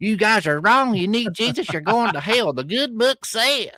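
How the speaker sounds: entitled, complaining, demanding voice. Imagining a modern-day Pharisee going in, doing a mock Karen accent. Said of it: "that's a good uh, carry accent".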